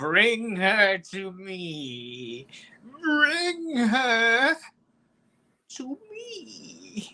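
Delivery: swooping, high-pitched demon voice. Telling Tom what a demon tells its minions, in a demon voice. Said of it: "Go fuck yourself with your little voices".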